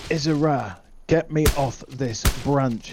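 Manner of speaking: snarling, demanding tone. A narrator voices Saladin, caught on a broken branch under gunfire, snarling. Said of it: "he snarls".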